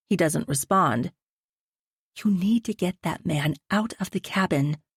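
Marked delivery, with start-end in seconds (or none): 2.2-4.7 tight, hushed, tense whisper. Reading a story aloud, a wife urging her husband quietly: tight whisper. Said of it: "I'm whispering so Ryan can't hear me".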